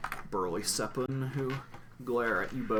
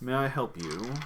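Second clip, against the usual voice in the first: stern, strict, severe woman's tone; 2 semitones higher than usual. Narrating a scene, the speaker voices a woman greeting the visitors: stern woman's voice. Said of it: "comes a, a stern woman's voice".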